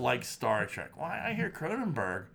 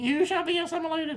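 little squeaky voice, much higher. Joking about a Borg cube kept in a bathroom urinal, in a squeaky little Borg cube voice. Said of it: "Like a little squeaky voice".

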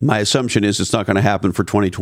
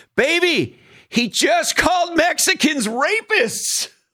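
acted, very high, long, drawn-out yell. Retelling calling out to his wife in the bathroom: imitating own scream. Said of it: "I screamed to her".

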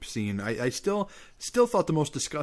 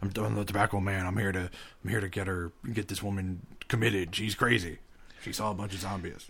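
put-on echoey voice, lower pitch; 3 semitones lower, 4 dB quieter than usual. Imagining the Tobacco Man getting a woman committed: echoey Tobacco Man voice. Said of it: "He's got the echoey voice".

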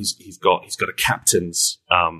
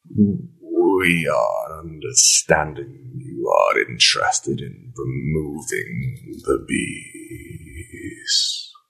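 strange, unfamiliar, very slow, swooping put-on voice; 3 semitones lower than usual. Voicing a being that speaks through his voice box: voice not his own. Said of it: "this is not [name]'s voice".

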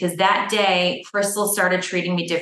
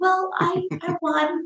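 put-on tiny voice, much higher, quieter, slower; 10 semitones higher, 4 dB quieter than usual. Retelling how a woman answered his question, imitating a tiny quiet voice. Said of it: "she just very quietly went".

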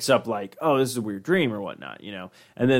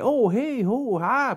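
put-on prim, old-fashioned proper voice, much higher; 12 semitones higher than usual. Describing a man acting weird, imitating prim 1950s proper talk. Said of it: "starts talking like he's from like, you know, the shit, like maybe the 50s".

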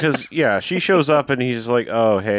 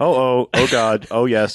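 newscaster voice, straight read. Acting out a man reading someone's reported last words, newscaster voice. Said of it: "he's all doing it in a newscaster voice".

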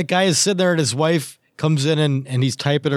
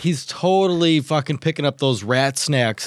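usual speaking voice

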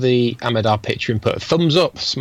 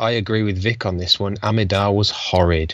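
plain

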